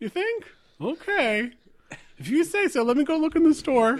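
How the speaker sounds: shrill, squeaky voice, very high and loud. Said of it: "I'm basically the janitor. ... I think I used to be a little squeakier a few minutes ago".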